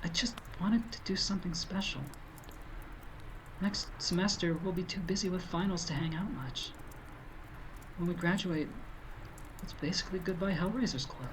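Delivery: soft-spoken, hushed, quiet, slightly high voice. Stuck camping in a blizzard with friends, a character speaks in a quiet voice. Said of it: "She says in a quiet voice".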